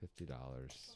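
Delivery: low, soft, sad, glum delivery. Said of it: "Why do you sound so sad?".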